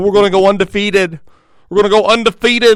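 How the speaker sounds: loud, high, clumsy mocking fake Boston accent. Speaker, not a Patriots fan, imitates the Patriots: bad Boston accent. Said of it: "I don't know how the Boston accent works".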